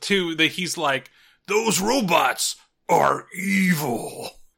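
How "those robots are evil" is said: very slow cartoon horse voice with "evil" drawn out. Retelling a cartoon scene to another speaker, imitating the horse's voice. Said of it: "you heard the horse's voice in that fucking scene".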